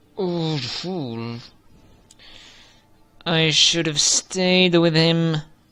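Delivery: through clenched teeth. Narrating a story: a woman beside a covered figure on a wagon speaks through clenched teeth. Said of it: "she says th- through clenched teeth".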